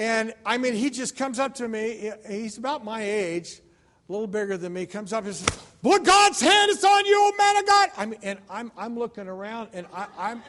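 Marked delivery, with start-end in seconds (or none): 5.8-7.9 shrill, very loud, high-pitched raised voice. Retelling a stranger prophesying over him at Home Depot: imitating a raised voice. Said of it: "with a raised voice".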